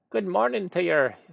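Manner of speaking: chirpy little voice, high and creaky. Narrator voices O'Shamus greeting the listener from behind; chirpy little voice. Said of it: "says a chirpy little voice behind you".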